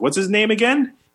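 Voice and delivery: put-on loud, high voice, blurted out for all. Retelling a friend asking a question near someone: imitating a friend asking loudly.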